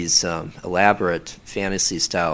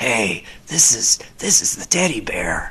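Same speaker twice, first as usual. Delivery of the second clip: corny rough throaty teddy-bear voice, higher pitch; 4 semitones higher than usual. Demonstrating the teddy bear voice from their audios, rough voice from back of throat. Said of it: "talking roughly in the back of my throat".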